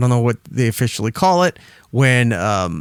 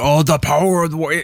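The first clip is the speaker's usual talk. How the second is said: put-on ancient spiritual guide voice, higher; 3 semitones higher than usual. Retelling a promo line: Ultimate Warrior impression. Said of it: "talking like an ancient spiritual Indian guide".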